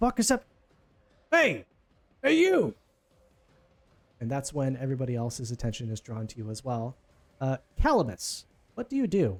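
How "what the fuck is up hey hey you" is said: very high, swooping shouted yell. Voicing a guard who hears screams and calls out to the group: yelling. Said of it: "This guy just yelled".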